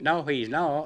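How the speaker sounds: put-on short, clipped Tennessee accent. Retelling a phone call where a man's wife answers, tennessee accent. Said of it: "with a Tennessee accent".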